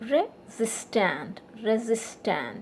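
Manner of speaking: resistant, with stress on the syllable sis. Showing learners how to say the word: stress on SIS in resistant. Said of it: "sis is stressed here".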